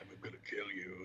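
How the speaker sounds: very quiet, barely audible, scary, menacing voice. Retelling personalized threats made on a morning show: scary Jigsaw voice. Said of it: "in his scary Saw voice".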